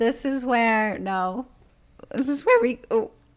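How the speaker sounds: voice breaking and cracking mid-phrase. Starting to set up an argument with the other speaker, voice cracking. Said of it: "voice crack".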